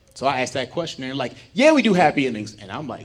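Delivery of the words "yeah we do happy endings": very loud, high, breezy, matter-of-fact casual tone. Retelling how staff in Amsterdam answered his whispered question; retelling a loud reply. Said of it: "why the fuck are you so loud?".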